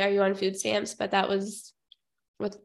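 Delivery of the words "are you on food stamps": ordinary talk, nothing marked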